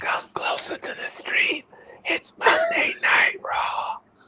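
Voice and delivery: airy, breathy, hushed near-whisper. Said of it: "Why do I sound breathy?".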